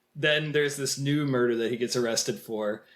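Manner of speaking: ordinary delivery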